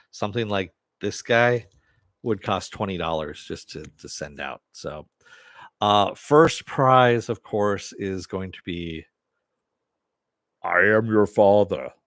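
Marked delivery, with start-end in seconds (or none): 10.7-11.8 loud, put-on, different voice behind a mask. Announcing the first prize with a mask on, different voice with the mask on. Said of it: "I talk in a different voice when I have the breathalyzer on".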